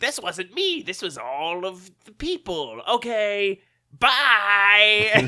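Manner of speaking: hammy, loud, high cartoon supervillain voice, stretched-out "bye". Recapping a show, quoting the villain in a cartoon Batman villain voice. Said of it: "he's still got a cartoon Batman villain voice".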